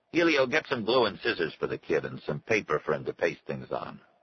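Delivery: ordinary delivery, nothing marked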